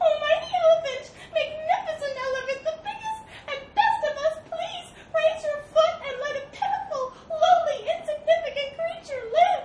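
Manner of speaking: very high, very loud, pleading, begging shriek. Reading a fable, the narrator voices a mouse pinned under an elephant's foot: shrieking at the top of voice. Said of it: "Shrieked mouse at the top of his voice".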